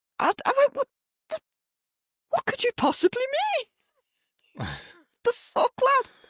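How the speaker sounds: very high-pitched, swooping sing-song voice sounding disbelieving. Retelling their own reaction to someone's remark, in a high-pitched voice. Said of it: "So of course I go into me like high pitched".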